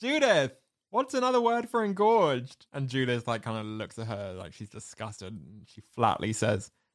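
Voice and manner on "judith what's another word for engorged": very high, acted-out shouted call. Retelling a film scene, calling out to a colleague: imitating someone shouting. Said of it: "she shouts out to her colleague".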